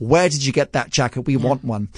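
ordinary talk, nothing marked

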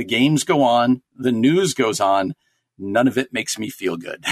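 ordinary delivery

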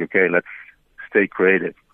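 plain

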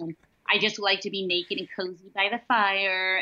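ordinary talk

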